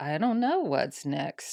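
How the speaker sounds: odd, weird, lazy-sounding put-on delivery. Retelling own past reply about what comes next: put-on weird lazy tone. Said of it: "I got into this really weird, like, lazy".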